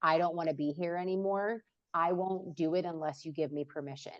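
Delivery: ordinary talk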